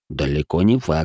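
ordinary delivery

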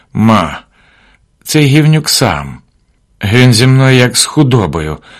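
barely above a whisper. A son speaks to his mother as she looks at him sadly, almost whispering. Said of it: "майже пошепки промовив Василь".

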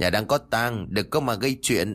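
ordinary delivery, nothing marked

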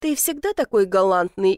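usual speaking voice

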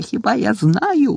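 slow, high-pitched shouting. Narrating a boy answering a frightened girl's question: shouting. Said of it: "закричав Гаррі".

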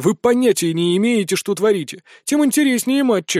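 plain reading voice

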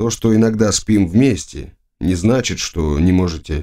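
ordinary delivery

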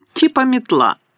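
high, contemptuous, scornful snorting sneer. Malfoy grabs Harry's package and feels it, snorting scornfully. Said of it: "Зневажливо пирхнув він".

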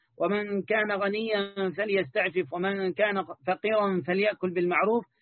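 ordinary talk, nothing marked

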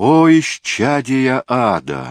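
high, loud, stunned, shocked cry. A woman exclaims, stunned that another has outwitted her, in shock. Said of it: "Могла только воскликнуть Соломея".

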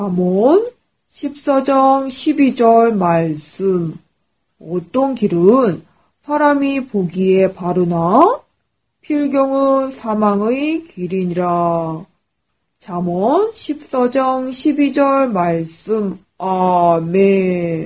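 vigorous, hearty put-on middle-aged man's voice. Reading a Proverbs verse aloud in a put-on middle-aged man's voice. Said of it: "아저씨 목소리로 씩씩하게".

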